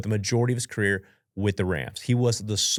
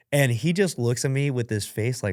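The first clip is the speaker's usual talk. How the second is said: ordinary talk, nothing marked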